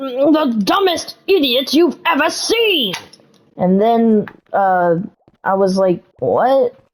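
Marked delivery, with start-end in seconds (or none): 0.0-2.9 put-on high, angry, cross, grouchy grumbling voice. Retelling someone's reply to the speaker's question, imitating an angry, grouchy voice. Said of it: "grouchy voice that sounded more like".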